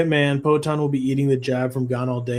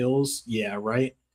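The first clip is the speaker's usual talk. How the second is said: ordinary talk, nothing marked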